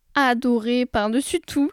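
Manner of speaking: plain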